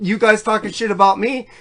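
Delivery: ordinary delivery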